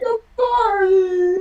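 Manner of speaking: high-pitched, loud sobbing, crying voice.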